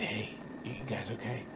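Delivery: hushed, very quiet, soft, barely audible half-whisper. Showing how to gently wake sleeping campers: half-whispering. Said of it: "kind of whisper".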